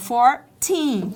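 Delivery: put-on fourteen, second syllable -teen stressed hard. Distinguishing fourteen from forty, stress on teen in fourteen. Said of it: "O teen é mais forte".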